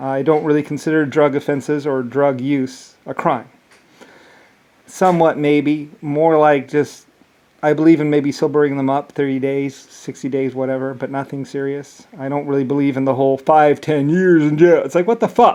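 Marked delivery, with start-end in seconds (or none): 12.2-15.6 raised, forceful voice, pushing harder, rising in pitch. Sharing a strong personal opinion with listeners, in a raised voice. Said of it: "I don't mean to raise my voice".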